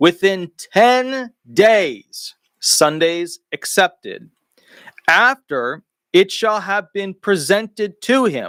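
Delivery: slow, deliberate reading. Reading a constitutional clause aloud and explaining it: reading slowly. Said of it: "I'm going to read it slowly".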